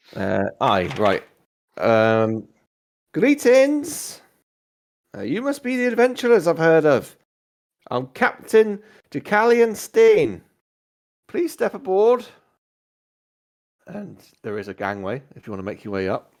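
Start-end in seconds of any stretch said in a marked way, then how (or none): 3.1-12.2 very high-pitched calling out. Narrating a game, voicing the captain greeting the adventurers, as Captain Deucalion Stain calling down. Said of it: "you hear a voice call down".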